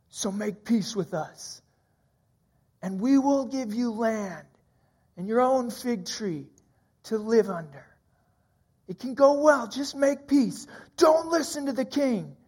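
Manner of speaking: light call from a distance, only half projected. Retelling the king's leaders shouting up at the city walls, retelling a shout. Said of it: "you hear them shouting".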